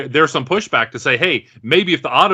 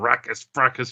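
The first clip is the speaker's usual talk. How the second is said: put-on angry robot muttering under breath, quieter; 6 dB quieter than usual. Retelling a film scene, imitating Optimus muttering angrily under his breath. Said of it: "you could hear him under his breath".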